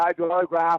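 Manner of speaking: mushy, slurred speech with words run together. Retelling what a fan at a convention said: imitating slurred speech. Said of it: "He talks kinda like that".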